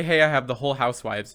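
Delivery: ordinary talk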